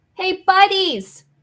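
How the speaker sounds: loud high-pitched yelling. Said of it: "try to yell".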